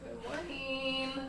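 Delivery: slow, sing-songy tone.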